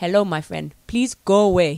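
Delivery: loud put-on Nigerian accent, improvised. Put on the spot, the speaker tries out a Nigerian accent. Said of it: "try a Nigerian accent for you".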